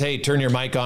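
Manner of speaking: ordinary talk, nothing marked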